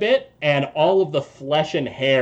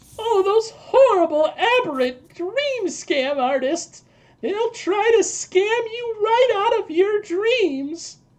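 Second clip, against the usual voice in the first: put-on very high little old granny voice. Voicing a grandmother after she destroys a nightmare: grandmother character voice. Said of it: "And she goes".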